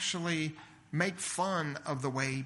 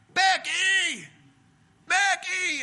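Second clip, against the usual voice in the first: shrill, very high, full-volume screaming shriek; 10 dB louder than usual. Recounting a mother in a store calling for her kid, retelling a scream at full volume. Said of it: "she just screams one of her kids' names at the top of her lungs".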